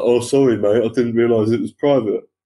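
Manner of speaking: put-on, stupid, dopey, meek, docile voice. Quoting a drunk man's apology to the speaker, in a mock stupid, docile voice. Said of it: "in the most stupid, docile voice".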